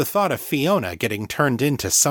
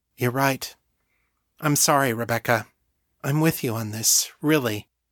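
ordinary delivery, nothing marked

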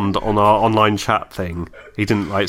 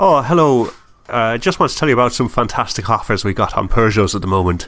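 put-on Irish accent, salesman voice, sales-pitch delivery; 2 semitones higher than usual. Prank-calling a colleague, pretending to be from a car company, put-on irish accent. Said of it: "put on an Irish accent and said".

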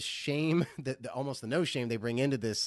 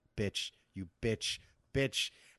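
put-on muttering under the breath, much slower. Retelling how a woman reacted to being told off in a parking lot, imitating muttering under breath. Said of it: "saying under her breath".

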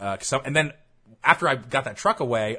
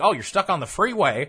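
pitched-up, put-on rural country bumpkin accent; 7 semitones higher, 4 dB louder than usual. Retelling a call with the Pennsylvania Turnpike Commission, imitating a country bumpkin accent. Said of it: "I'm using somewhat of an accent".

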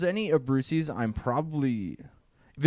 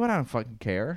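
ordinary delivery

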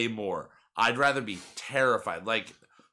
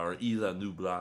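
French-accented Spanish words, lower and quieter; 4 semitones lower, 5 dB quieter than usual. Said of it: "I said Spanish words in a French accent".

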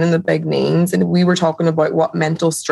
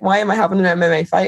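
put-on tearful crying; 2 semitones higher than usual. Retelling own past words two weeks before a fight: imitating own past crying. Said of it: "Crying my eyes out".

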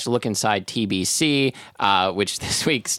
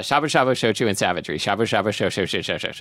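rapid, fast-paced articulation. Trying a tongue twister as another speaker dared: saying a tongue twister fast. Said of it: "You just try saying that three times fast".

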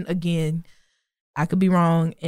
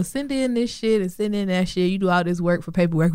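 ordinary delivery

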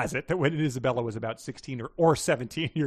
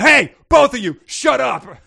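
piercing, very high, very loud shrill shout; 11 semitones higher, 13 dB louder than usual. Narrator reads a character cutting into two others' argument, yelled. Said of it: "Billy yelled".

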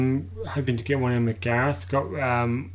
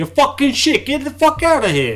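fake New York tough talk, very high, loud, swooping; 13 semitones higher, 8 dB louder than usual. Joking with a co-speaker, speaker acts out firing someone, in a bad New York accent. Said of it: "It's a bad New York impression".

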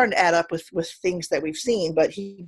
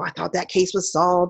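put-on whispering voice. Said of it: "nagging her and whispering to her".

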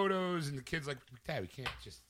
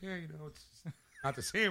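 put-on dry, casual, deadpan delivery. Retelling the same man's remark: imitating a dry casual delivery. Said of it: "in that dry, kinda, like, casual conversation".

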